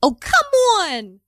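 very high, put-on Philadelphia accent. Describing a partner from Philly and quoting her in a Philly accent. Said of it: "She says like".

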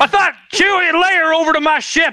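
touch of Southern drawl. Joking about how Han and Leia's names are said, a little Southern accent. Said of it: "that I went a little Southern".

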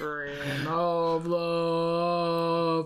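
put-on very deep bass voice. Trying to go as low as possible: Mister Pig, very deep voice. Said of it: "That's the lowest I could go".

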